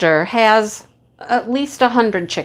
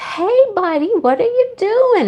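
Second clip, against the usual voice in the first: put-on very high, cooing baby talk; 11 semitones higher than usual. Retelling how a visitor spoke to a rooster: imitating baby talk to a rooster. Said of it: "talking to him like a kid talks to a baby".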